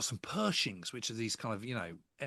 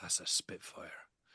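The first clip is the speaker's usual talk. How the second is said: mock awed, hushed, reverent whisper; 5 semitones lower, 4 dB quieter than usual. Retelling what the umpire said as a Spitfire flew over: imitating reverential tones. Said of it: "in very sort of reverential tones".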